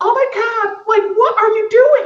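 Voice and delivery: put-on girl voice, very high and drawn out. Trying out a Jade impression to show how he plays a girl: Jade impression. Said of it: "my Jade impression".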